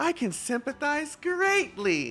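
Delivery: put-on super excited voice. Retelling how she sounded saying a line: imitating a super excited voice. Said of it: "super excited".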